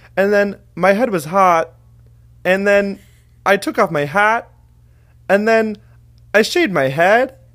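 every clause and phrase end rising up. Imitating how a man talked, rising up at phrase ends. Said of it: "it always ends on an up".

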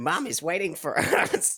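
plain

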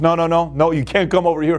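normal talking voice

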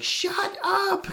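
very high screamed outburst. Retelling a movie scene where he screams at the sky: imitating a scream. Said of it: "he screams at the sky".

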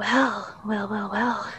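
deliberately low radio voice. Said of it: "speak down here in my radio voice".

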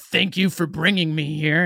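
put-on sarcastic tone. Recounting one line a character says to those who lied, retelling sarcastic thanks. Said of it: "And he was real sarcastic".

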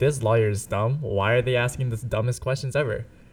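ordinary talk

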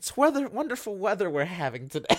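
ironic, sarcastic tone of light chit-chat. Retelling a remark to a bored stranger at a bus stop: retelling own sarcastic remark. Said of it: "I offer a sarcastic comment".

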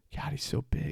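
muttering under breath. Retelling what someone muttered about a man running on the sidewalk, retold mutter under his breath. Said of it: "he just says under his breath".

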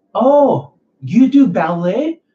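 very high, drawn-out, slow upspeak rising on ballet. Mocking a guy who gives compliments: Todd Valentine voice, rising on ballet. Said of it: "up talking like this".

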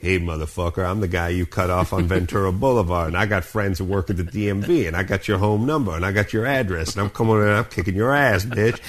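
scary, menacing put-on tough-guy voice.

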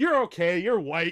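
loud, high-pitched mock security guard voice.

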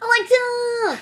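high, loud, shrieking, really annoying voice. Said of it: "using my really, really annoying voice that you hate".

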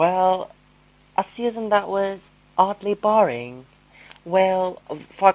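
fake, put-on British accent. Podcast host speaking with co-host, in a put-on british accent. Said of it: "why am I still talking in British accents?".

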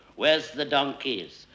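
ordinary talk

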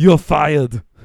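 very loud, booming put-on movie voice. Giving a movie quote as a trivia clue: Arnold Schwarzenegger voice. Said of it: "I'm gonna give you the next quote in the voice".

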